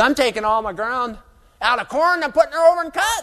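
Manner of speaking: mocking, high-pitched Texas cotton grower voice.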